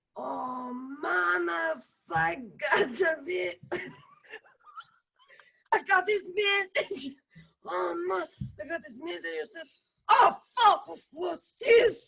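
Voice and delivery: hoarse, raspy, bad fake Jamaican accent, swooping pitch. An actor, asked to use a jamaican accent, performs the take in a raspy put-on jamaican accent. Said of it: "Does your character have a throat cancer? Just Jamaican accent is fine".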